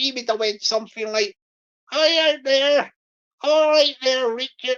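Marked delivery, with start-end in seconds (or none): 1.9-4.8 put-on Bristol accent voice. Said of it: "I'll do the Bristol voice".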